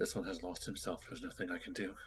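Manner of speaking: hushed whisper. Player's character stepping back and whispering to Ewing, whispering. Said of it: "I'll just whisper to Ewing".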